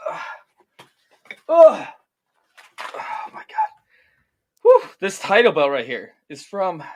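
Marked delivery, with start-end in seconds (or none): 5.0-6.8 put-on breathless panting. Lifting a heavy trophy belt for a sponsor read: mock out of breath. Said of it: "Sorry, I'm a little bit out of breath".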